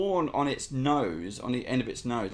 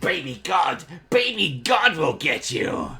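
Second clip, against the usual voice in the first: loud, bold, brave-sounding kobold voice; 4 semitones higher, 7 dB louder than usual. Voicing the last standing kobold pointing a spear: brave kobold voice. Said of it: "he points the spear up at Thorin and goes".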